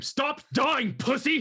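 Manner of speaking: shrill, very high, loud screaming. Voicing a character healing a dying ally: screaming. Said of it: "he's gonna scream".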